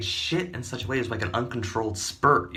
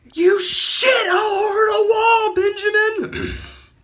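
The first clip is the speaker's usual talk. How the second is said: screaming full force, very high, very loud, shrill, drawn-out; 10 dB louder than usual. Retelling finding a mess on the wall: imitating own past screaming. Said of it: "I just started screaming".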